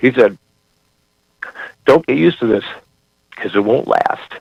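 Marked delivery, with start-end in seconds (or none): 1.8-4.3 moved, choking up, voice catching on words. Recalling what a promoter once told him, choking up. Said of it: "I'm choking up just thinking of it".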